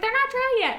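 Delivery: shrill, very high, shrieking shout. Recounting snapping at him for touching wet nails, retelling a shrill yell. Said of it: "It's very shrill".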